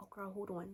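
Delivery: hushed, barely audible half-whisper. Retelling a phone call where the friend starts half-whispering: imitating someone half-whispering. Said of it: "She starts whispering".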